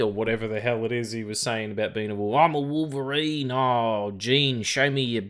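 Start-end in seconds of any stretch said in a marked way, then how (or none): 2.3-5.2 slow, clumsy, bad Australian accent. Recounting what someone said and mimicking it, doing a rough approximation of the man's speech in a bad australian accent. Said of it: "someone trying to do an approximation of an Australian accent, like when I do one".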